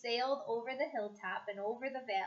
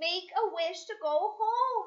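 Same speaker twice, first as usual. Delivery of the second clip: high, loud, urgent cry, very slow; 7 semitones higher, 5 dB louder than usual. A dinosaur slams into the treehouse and a character cries out; crying out. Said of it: "cried Annie".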